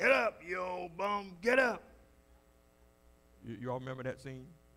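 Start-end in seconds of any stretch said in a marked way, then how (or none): 0.0-1.8 crackly, very high, loud, slow bark. Retelling the Rocky flashback where his trainer yells at him, in Mick's crackly voice. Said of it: "he got that little crackly voice".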